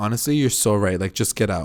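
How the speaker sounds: ordinary delivery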